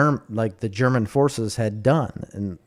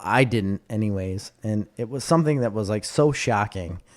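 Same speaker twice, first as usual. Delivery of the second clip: ordinary talk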